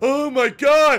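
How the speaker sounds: put-on exaggerated overreacting tone. Imitating streamers overreacting to an explosion: mock overreaction. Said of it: "completely overreacting to it".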